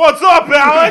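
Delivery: very loud, very high-pitched shout. Imitating how they would greet a podcast guest: imitating own loud voice. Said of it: "My voice is so loud".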